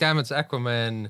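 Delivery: normal talking voice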